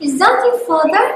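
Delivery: question-like tune climbing on father. Repeating an example question for learners to copy, rising intonation at end. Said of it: "the tone of my voice rises at the end".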